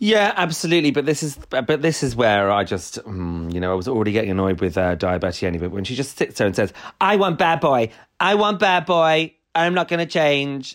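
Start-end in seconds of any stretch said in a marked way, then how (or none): 7.0-10.8 high, slow, drawn-out snotty whine. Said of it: "so vocal and so snotty".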